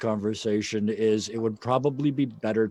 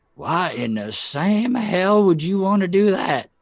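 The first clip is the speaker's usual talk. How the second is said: put-on loud, high, tipsy, drunken voice; 8 semitones higher, 5 dB louder than usual. Voicing a drunk man asked about dynamite: drunk man's voice. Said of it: "who's already well into his cups".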